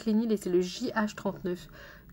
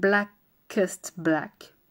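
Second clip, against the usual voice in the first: over-the-top, exaggerated, put-on English accent; 5 dB louder than usual. Saying a product shade's name in an exaggerated English accent. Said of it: "je vais vous faire mon merveilleux accent anglais".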